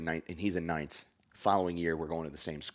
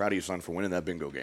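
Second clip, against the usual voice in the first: usual speaking voice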